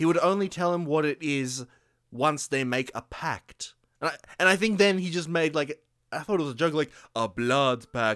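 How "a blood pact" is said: silly, bad, put-on Romanian accent. Retelling a film scene where a kid jokes about a pact: imitating a bad romanian accent. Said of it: "he put on, like, a bad Romanian accent".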